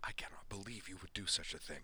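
whisper full of pure fury. Frey Lightwalker to his sister, in a furious whisper. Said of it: "in a furious whisper".

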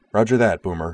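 plain

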